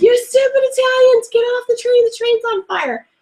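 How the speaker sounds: put-on shrill screaming, voice way up high. Retelling yelling at people blocking the way off a burning train, retelling a scream. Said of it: "I'm screaming".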